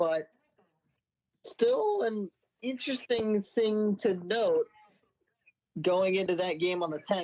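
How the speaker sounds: voice cracking and breaking partway through. Previewing an upcoming game on the tenth, the speaker keeps talking with voice cracking. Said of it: "as my voice cracks right there".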